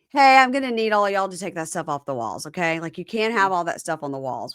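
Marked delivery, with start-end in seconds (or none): none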